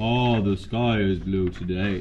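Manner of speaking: very low, dragged-out, slow-motion delivery. Explaining a game where someone repeats a line, slow-motion replay voice. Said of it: "Slow motion replay after".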